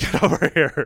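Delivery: acted, yelling, fatherly voice. Retelling a show scene where a father yells at his son: imitating a father yelling. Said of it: "just starts yelling at him".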